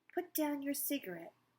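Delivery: firm yet gentle voice. The doctor speaks to the woman staring at the pickle: strong but gentle voice. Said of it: "said in a strong but gentle voice".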